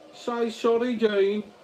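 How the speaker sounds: high-pitched Birmingham accent.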